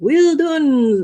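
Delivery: bad Scottish accent, very high, shrill shout. Retelling a story, a man yells out to a witch he admires, terrible put-on accent. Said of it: "this is a terrible accent".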